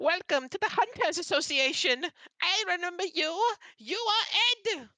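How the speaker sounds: very high, loud, tiny owl-creature voice. A narrator voices a small humanoid owl greeting the group, small owl creature voice. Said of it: "you see the small little humanoid owl run up to the group and go".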